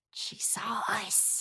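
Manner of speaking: hushed, very quiet whisper. Voicing a hidden bandit who notices she has been spotted: whisper. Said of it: "a couple little whispers".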